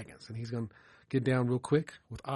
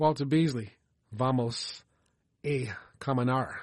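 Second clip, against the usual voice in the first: non-fluent Spanish spoken with a Southern American accent. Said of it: "forgive my southern Spanish accent".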